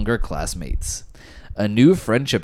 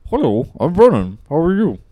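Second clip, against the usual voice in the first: high, loud put-on Swedish accent, mushy mouth-full English; 8 semitones higher, 6 dB louder than usual. Explaining how swedish sounds to english ears, the speaker demonstrates a mock swedish accent. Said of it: "It sounds like English, but just if you have your mouth full".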